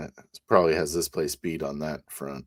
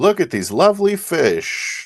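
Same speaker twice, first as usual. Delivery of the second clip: loud, high, in-character exclaiming voice; 12 semitones higher, 7 dB louder than usual. Voicing a character admiring the fish: loud in character.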